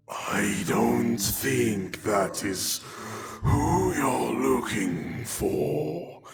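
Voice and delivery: ominous, foreboding, echoing voice. Narrator voicing a figure in the scene, ominous, echoey voice. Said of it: "Says this kind of ominous, echoey voice".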